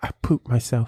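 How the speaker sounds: put-on whisper. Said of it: "whisper in his rear, whisper in his ear".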